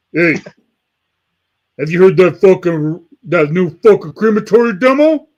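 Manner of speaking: put-on Yonkers accent. Retelling a phone call about a demo: Will Romer Yonkers accent. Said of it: "he straight up told me in that Yonkers accent".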